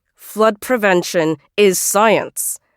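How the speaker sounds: through gritted teeth. Meg replies to a boy who doubts her exhibition project, through gritted teeth. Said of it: "I say through gritted teeth".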